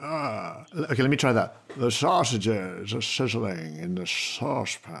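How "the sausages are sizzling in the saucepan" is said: put-on goat-like voice, quieter and slower. Trying out the tips you were just given, do a Sean Connery impression, H before S. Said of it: "put an H in front of S words and sound like a goat".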